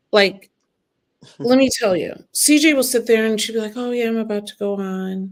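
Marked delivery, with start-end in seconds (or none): 3.7-5.3 soft, hushed, chill, easygoing voice. Describing how CJ acts before going on at her shows, imitating CJ's quiet, soft voice. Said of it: "you have such a nice, quiet, soft voice".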